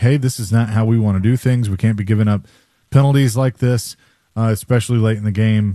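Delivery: normal talking voice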